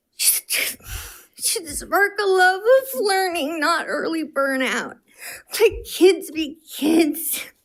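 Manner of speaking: very high, slow sobbing speech, crying through it. Kirsten finishing her remarks, sobbing while speaking. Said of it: "(Kirsten sobs)".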